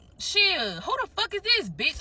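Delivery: furious, high, swooping, angry cussing. Retelling cussing out a driver who blocked the car: retelling cussing someone out. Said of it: "I'm cussing them out through the car".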